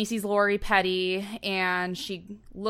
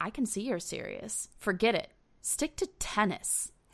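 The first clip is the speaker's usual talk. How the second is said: put-on scornful, disdainful tone, quieter; 5 dB quieter than usual. Quoting a woman's reply to a man, mock-disdainful. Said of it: "says tennis so disdainfully".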